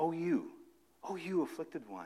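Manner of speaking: close, personal, quiet tone. Coaching readers on how to deliver a line, demonstrating in an intimate tone. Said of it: "bring down the tone of voice to an intimate tone".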